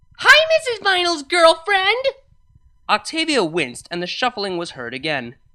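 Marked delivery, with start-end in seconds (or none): 0.2-2.1 very high, very loud, shrill screech. Reading a phone message aloud where a drunk caller screams: shrill scream. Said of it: "a shrill female voice screamed into the phone".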